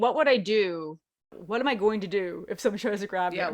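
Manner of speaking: plain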